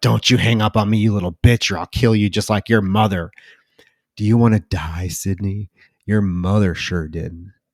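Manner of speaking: put-on ominous, menacing voice. Retelling a horror film scene where the killer threatens her: imitating the killer, ominous. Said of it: "that very ominous moment".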